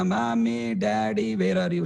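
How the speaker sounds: mock tearful wailing, high, drawn-out sobbing. Acting out a lost child in a railway station: crying and shouting for parents. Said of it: "crying like anything".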